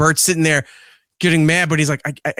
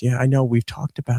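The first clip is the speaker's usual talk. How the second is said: whispered, lower pitch; 3 semitones lower than usual. Retelling what a little girl whispered while bathing her baby doll: retelling a whisper. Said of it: "And she's whispering".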